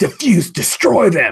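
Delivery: very high-pitched, shrieking villain-voice scream. Voicing a villain flying away from two heroes: villain screaming an order. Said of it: "and he screams out".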